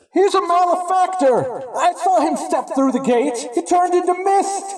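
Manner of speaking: loud shout. Voicing someone from the church accusing a player: yelling out accusation. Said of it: "someone from the church yells out and says".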